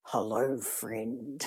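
really deep soft voice. Mother describing a voice her son hears in his head, in a really deep voice. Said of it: "a really deep voice in his head".

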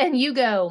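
usual speaking voice

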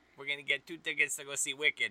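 attempted Chicago accent. Offering to try the accent for the other host, Chicago accent. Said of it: "let me do that Chicago".

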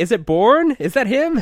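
very loud, very high, shrill blurted outburst. Recapping a movie scene, retelling what a character said: quoting her very loudly. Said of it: "she goes very loudly".

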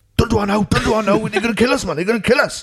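frantic, frightened, high, panicky voice. Recalling Matthew making a joke, acting out Bob: imitating Bob panicking. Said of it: "Bob was shitting himself".

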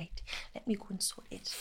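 put-on whispered, breathy, mild Geordie accent. Quoting their drama teacher from Middlesbrough, in a slight Geordie accent. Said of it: "she had a slight Geordie accent and she'd be like".

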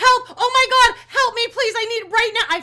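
very loud, very high, shrill, desperate, frantic screams. Speaker reenacting her call to tech support, retelling frantic screaming. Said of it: "I'm screaming".

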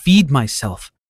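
ordinary delivery

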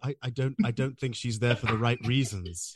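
very slow speech, every word drawn out. Imitating an actor watching a dating show: Daniel Day-Lewis impression. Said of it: "that's my Daniel Day-Lewis impression".

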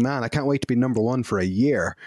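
ordinary delivery

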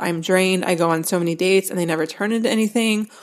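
ordinary talk

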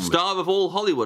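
usual speaking voice

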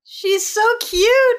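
high, slow gushing squeal.

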